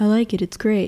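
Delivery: flat monotone put-on voice. Recapping an anime scene with friends, quoting Jotaro in a monotone. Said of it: "Like really monotone".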